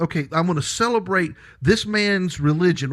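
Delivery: ordinary delivery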